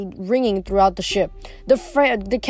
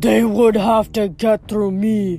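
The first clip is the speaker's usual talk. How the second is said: growling giant cyclops voice. Narrator reading the cyclops's line to Grover, growling Polyphemus voice. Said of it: "Polyphemus growled".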